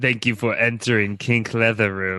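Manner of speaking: put-on robot voice with Jamaican accent. During a comic role-play bit, the speaker talks like a Jamaican robot. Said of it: "you sound like a Jamaican robot".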